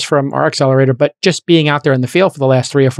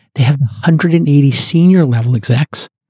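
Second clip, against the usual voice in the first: voice taken down a notch, lowered. Host in an ad read, announcing the change of voice: lowered voice. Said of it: "I'm going to lower my voice here".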